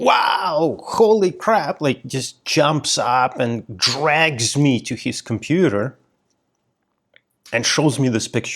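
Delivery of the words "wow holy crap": sudden, high, startled, excited yell. Recalling a fellow master's student suddenly jumping up, imitating someone yelling. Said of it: "he just like yells".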